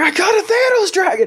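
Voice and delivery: acted, very high, flipped-out freak-out shriek. Retelling a reaction to a card in the car: imitating own past screaming. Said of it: "I started screaming".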